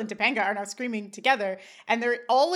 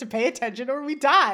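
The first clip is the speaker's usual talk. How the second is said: usual speaking voice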